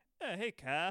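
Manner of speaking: high character voice. Showing how the voice changed in later seasons: later Eric Cartman voice. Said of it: "Then his voice goes like".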